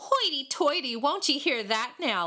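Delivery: scornful jeering laughter. Reading a story: answering a refusal to play, laughing mockingly. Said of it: "Laughed a mocking voice".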